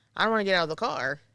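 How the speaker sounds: acted out, tearful, crying voice. Retelling what was said in the driveway before a caregiving shift: retelling own past crying. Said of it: "sitting in the driveway and crying and saying".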